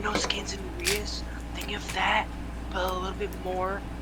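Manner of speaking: soft, hushed whisper.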